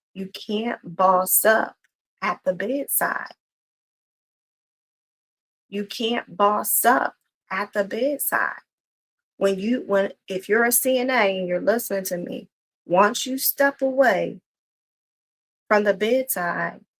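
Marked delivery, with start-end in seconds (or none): 0.2-8.6 every word slow and deliberately emphasized. Speaker addressing nursing assistants who are listening: speaking slowly. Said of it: "I'm going to say this slowly".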